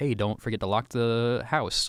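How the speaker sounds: usual speaking voice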